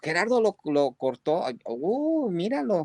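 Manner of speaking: high, surprised, amazed exclamation. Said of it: "bien sorprendidos de que".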